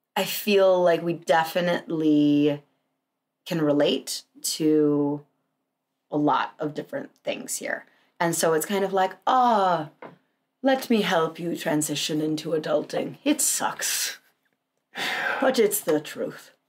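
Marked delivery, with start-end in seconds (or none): 9.3-16.5 put-on accent of an old wizard. Talking with a co-host about relating to younger people, put-on old wizard accent. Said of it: "accent I'm doing? ... old wizard accent".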